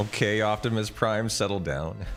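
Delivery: normal talking voice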